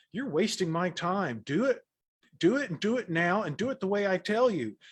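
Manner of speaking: mock exasperated, no-nonsense, high, impatient snap. Retelling the moment of losing patience with a student: imitating snapping at someone. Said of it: "I just snapped at him like".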